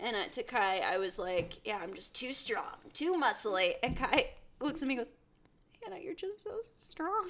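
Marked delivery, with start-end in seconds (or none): 5.8-7.3 acted, very high, quick, hushed tearful whimper. Telling a story, the speaker acts out another person's reply, imitating someone crying. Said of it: "and starts crying".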